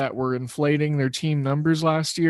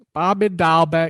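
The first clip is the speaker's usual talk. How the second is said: terrible, bad, fake put-on Boston accent. Talking about boston's game, saying a player's name in a put-on boston accent. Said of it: "That was my best Boston accent".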